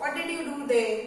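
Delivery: normal talking voice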